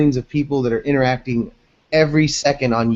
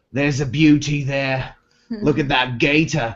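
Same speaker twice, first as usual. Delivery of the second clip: put-on Australian wildlife-presenter voice. Doing a voice over a Lego gator: Steve Irwin voice. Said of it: "now you can do the Steve Irwin voice".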